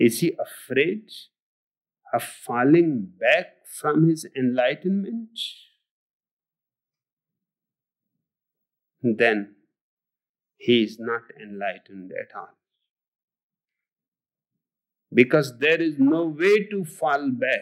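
very slow, drawn-out speech with a lulling cadence. Addressing an audience, talking very slowly. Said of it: "He talks so slowly".

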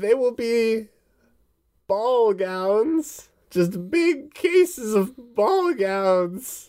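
put-on elderly woman voice. A woman gives instructions to her visitors, in an old lady voice. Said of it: "Where she's like a straight up plump, rounded old woman. She's got warts and stuff. / Where she's like a straight up plump, rounded old woman. She's got warts and stuff. / It was old lady voice. / (op".

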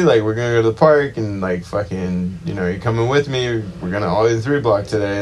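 ordinary talk

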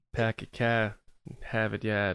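Boston-accented speech. Joking around with others about accents, trying a boston accent. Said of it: "and then you can do the accents".

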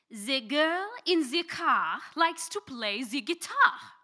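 whole sentence spoken in a French accent. Saying a sentence for others to repeat; French accent. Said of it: "I am going to say a short sentence in a French accent".

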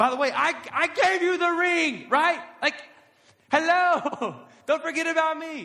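play-acted annoyed, loud, high, frustrated griping. Acting out a boyfriend who gave the ring and feels forgotten: acting frustrated and angry. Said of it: "Maybe angry".

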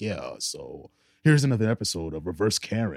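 deep, full-on video narrator announcer voice. Speaker imitates a video's narrator introducing an episode, in an announcer voice. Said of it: "has like the ultimate fucking announcer voice".

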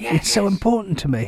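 whispering. Introducing an early demo recording to listeners, whispering. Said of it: "i got to whisper".

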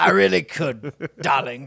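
deep cigar-smoker voice. Offered to do the rest of the show this way, answering in deep Lord Alfred Hayes voice. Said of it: "I feel like you could tell me about a safari right now".

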